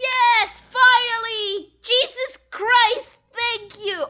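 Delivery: sudden, excited, enthusiastic outburst. Finding a long-wanted feature in a drawing app: enthusiastic outburst. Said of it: "I'm sorry for my enthusiasm".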